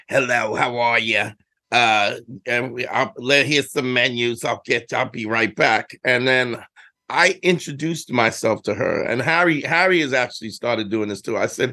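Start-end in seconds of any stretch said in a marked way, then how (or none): 0.1-5.9 put-on older woman's long-time smoker voice. Retelling how an older lady greeted them at an italian spot, imitating an old smoker's voice. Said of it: "she had the 30 year smoker voice".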